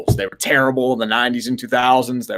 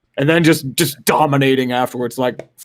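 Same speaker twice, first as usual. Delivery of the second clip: ordinary talk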